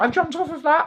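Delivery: high, excited, boastful tone.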